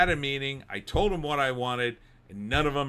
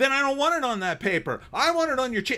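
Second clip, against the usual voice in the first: very high, fed-up, exasperated snapping outburst; 11 semitones higher, 3 dB louder than usual. Retelling arguing with a woman at Kinkos over paper, acting out losing temper. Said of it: "I lost my S".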